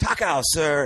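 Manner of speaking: high, called-out yell in broken English. Retelling how a restaurant worker called out while leaving: imitating someone yelling. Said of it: "and he yells".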